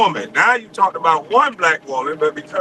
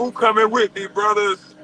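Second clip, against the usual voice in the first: put-on weepy, sobbing, tearful crying; 4 semitones higher than usual. Retelling what Stephen A Smith said while crying: imitating Stephen A Smith crying. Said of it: "Stephen A Smith crying, talking about".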